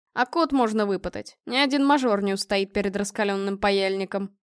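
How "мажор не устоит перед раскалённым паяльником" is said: ordinary delivery, nothing marked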